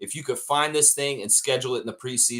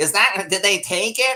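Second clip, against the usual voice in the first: deliberately irritating put-on voice, high-pitched and loud; 7 semitones higher, 5 dB louder than usual. Acting out a scene about a missing cup: annoying Richard Petty voice. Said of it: "I'm trying to make him really annoying".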